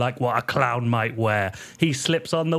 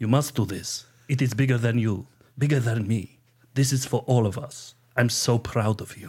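put-on Russian accent. In a comedy bit, urging a partner to go become an american, russian accent. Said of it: "Everyone speaks in Russian accents in this bit".

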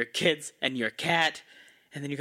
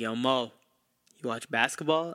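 lower, put-on smooth-talking voice; 4 semitones lower than usual. Retelling a coworker leaning back to ask about basketball: imitating Dwayne's smooth talk. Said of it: "he was very smooth in the way he talked".

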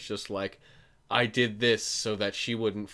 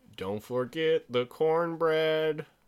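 odd, high-pitched put-on Cajun accent; 7 semitones higher than usual. Riffing on a list of cajun dishes, in a weird cajun accent. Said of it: "that was a weird accent".

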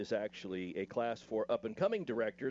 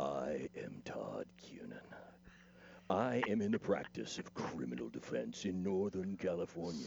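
dramatic voice-over read, lower; 5 semitones lower, 4 dB quieter than usual. Doing the requested dramatic actor read of a lawyer ad: dramatic actor read. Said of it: "do the dramatic actor read?".

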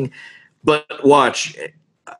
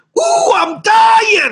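high, slow, manic, wild yelling. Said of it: "he's like".

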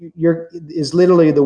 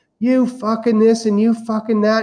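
high, ranting old-woman voice, acted out; 6 semitones higher than usual. Retelling an old lady swearing outside the building, imitating her screaming. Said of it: "like screaming".

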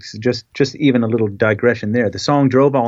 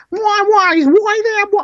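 very high, squeaky cartoon voice; 3 dB louder than usual. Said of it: "I can't do it right, but it was very like that".

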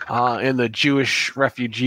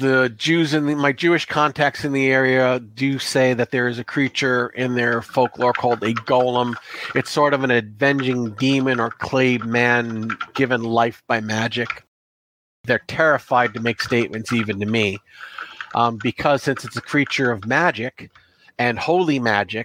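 ordinary delivery

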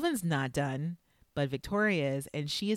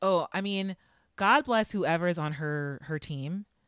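usual speaking voice

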